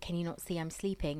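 ordinary delivery

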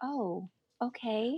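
quiet, numb, guarded, freaked-out voice. Retelling own reaction to news about the book: imitating a freaked-out quiet reply. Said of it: "this very freaked out, quiet".

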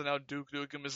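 usual speaking voice

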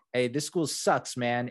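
put-on thick New Jersey accent. Retelling Daniel yelling at the coach, in the most Jersey accent in the world. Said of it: "the most Jersey accent in the entire world".

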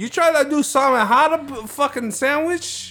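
ridiculous New York accent, very high and very loud. Riffing with friends on how people talk in new york, ridiculous new york voice. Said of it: "Why are you guys doing this ridiculous voice?".

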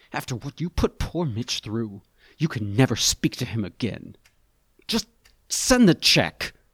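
rough held-back scream. Narrator reads Peter's reply to a caller on the phone: harsh ragged voice. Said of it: "Peter's voice is harsh and ragged".

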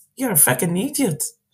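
put-on broadest possible Irish accent. Retelling what a young person said to an older bus driver, most Irish accent ever. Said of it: "in the most Irish accent ever".

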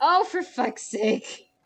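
voice cracking, breaking in pitch. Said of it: "That was a healthy voice crack there".

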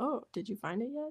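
put-on very quiet, hushed, patronising, condescending tone. Speaker recapping an episode, voicing two characters teasing her: mock-condescending. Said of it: "But in a more condescending way".

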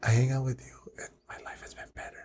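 hushed, very quiet, barely voiced whisper. Talking with another person during a recording; whispering. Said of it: "Why are you whispering?".

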